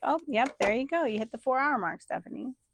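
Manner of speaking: spicy, snarky, sarcastic tone. Joking about timing a four-hour project: mock sarcastic tone. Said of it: "We're having some sarcasm today".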